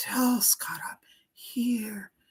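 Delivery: sweet, faint, slow, soft whispery near-whisper. Relaying what the listener's grandmother says to Scott, soft whispery voice. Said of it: "She talks in a whispery way".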